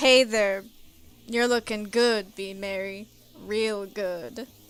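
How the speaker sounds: low-pitched, cocky bro voice. Voicing all the guys in the group, the speaker does a Chad voice. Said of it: "let me see if I can pull out my Chad voice".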